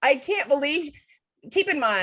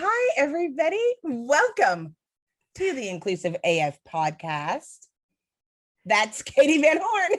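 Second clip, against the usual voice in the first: high, swooping, all-cheer woo-style delivery; 5 semitones higher than usual. Opening the podcast by impersonating your co-host to her face, do a cheerful Katie Van Horn impression. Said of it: "Are you trying to impersonate me right now by being all like".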